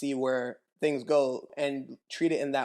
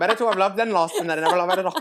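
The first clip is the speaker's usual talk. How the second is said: Irish accent, high and raised; 6 semitones higher, 8 dB louder than usual. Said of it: "I don't know why I said that like that".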